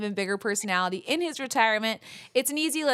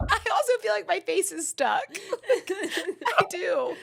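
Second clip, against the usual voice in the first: laughing, high, very slow, drawn out; 9 semitones higher than usual. Joking that a swollen face feels stuck: laughing while talking. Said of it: "I need to stop laughing".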